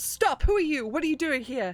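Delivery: high-pitched yelling. Voicing a guard who spots an intruder creeping in: guard shouting.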